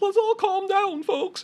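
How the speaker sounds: very high, placating, soothing put-on character voice. Describing his own character to a listener, doing the high Gherkins character voice. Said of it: "he has this high voice".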